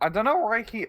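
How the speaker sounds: high voice cracking mid-phrase. Explaining another player's move to a co-speaker, voice cracking mid-sentence. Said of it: "Pardon the voice crack".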